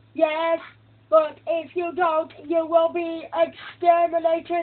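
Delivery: flat, level robotic monotone like a machine. Playing the Professor, answering a request to go build outside, in a Dalek voice. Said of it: "Now that's a Dalek".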